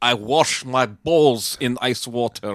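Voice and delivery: put-on Eastern European accent, spoken very slowly. Retelling a movie scene, quoting a Russian character: imitating an Eastern European accent. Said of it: "It is an Eastern European accent".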